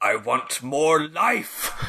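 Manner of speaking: very drawn-out, slow villain-style delivery. Doing a movie villain line: bad guy from Blade Runner voice. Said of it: "extremely the bad guy from Blade Runner voice".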